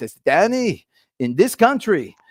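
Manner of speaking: put-on slow, lightly done, slight French accent. Speaker imitates his dad starting advice, with a little French accent. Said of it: "he had this little accent".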